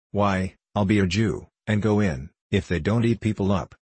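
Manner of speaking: ordinary delivery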